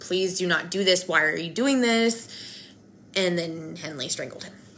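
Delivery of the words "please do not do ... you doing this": put-on pleading voice. Telling a crime story, acting out a boy's plea to the shooter. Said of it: "pleaded with Henley".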